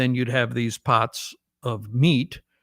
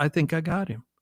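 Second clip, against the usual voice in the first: put-on quiet voice, slightly higher pitched; 4 semitones higher, 4 dB quieter than usual. Retelling Dad's reply after the deer vanished: imitating someone speaking quietly. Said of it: "and he quietly says".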